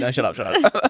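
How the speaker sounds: ordinary talk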